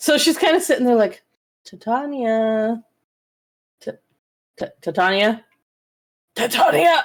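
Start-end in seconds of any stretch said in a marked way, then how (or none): 1.6-7.0 mimicked, varied inflections, much slower. Retelling how she sat working out how to say a name, mimicking her testing inflections. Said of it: "she's trying it in like different like inflections".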